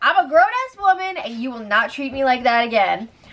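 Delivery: ordinary delivery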